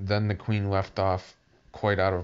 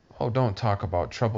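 ordinary delivery

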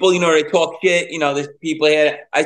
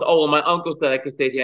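ordinary talk

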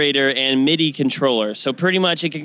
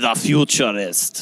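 put-on Austrian German accent, lower pitch; 4 semitones lower than usual. Asked by another speaker to say a product name: Arnold Schwarzenegger voice. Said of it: "Say it in, like, an Arnold Schwarzenegger voice".

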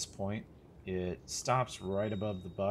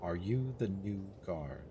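strange duplicated, echoed whispering voice. Game master voicing a woman the players meet: strange duplicated whispering voice. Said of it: "a strange voice that you hear sort of duplicated and whispered".

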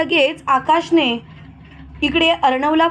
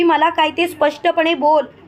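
ordinary delivery, nothing marked

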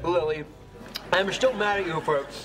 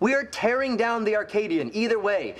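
plain reading voice

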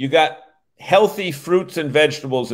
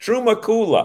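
put-on New England accent, much higher; 7 semitones higher than usual. Saying the product name aloud in a New England accent. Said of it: "Truma with a New England accent".

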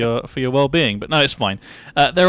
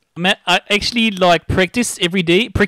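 fake Australian accent slipping into Indian, much higher pitch; 6 semitones higher than usual. Chatting in a put-on Australian accent, Australian accent slipping into Indian. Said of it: "I think you're turning a little bit Indian".

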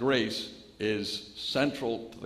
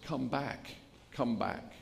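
soft, weak, feeble, failing crying call; 2 semitones higher, 6 dB quieter than usual. Speaker retells a girl clinging to wreckage calling after a ship: imitating a feeble cry. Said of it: "crying out in her feeble voice".

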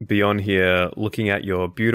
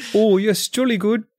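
put-on New Zealand accent, very high-pitched; 12 semitones higher, 4 dB louder than usual. Imitating Kieran who just left the call: imitating Kieran, New Zealand-sounding accent. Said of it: "that's still New Zealand".

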